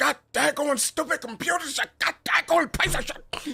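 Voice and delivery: mock angry old man grumble. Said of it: "This man is like".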